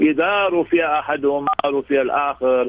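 ordinary talk

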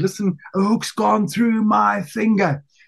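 acted-out shouting. Man retells his wife shouting to him from the boat's cabin, retelling a shout. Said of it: "She shouted back at me and said".

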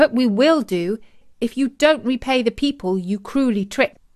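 plain

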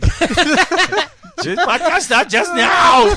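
bad put-on voice, very shrill, loud, slow, drawn-out. Doing bad impressions of the people present: bad impression of Eric. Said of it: "That's not what I sound like".

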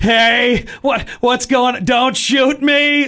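put-on American accent. Retelling the Die Hard scene where Hans Gruber fakes an accent: fake American accent. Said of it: "adopt like an American accent".

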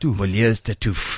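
French pronunciation. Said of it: "Just say it in a French accent".

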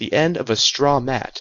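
ordinary delivery

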